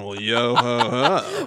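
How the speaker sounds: very slow, drawn-out, flirty bro drawl. Playing the character as a bro hitting on someone, flirty bro voice. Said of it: "he sounded like a bro, like hitting on someone".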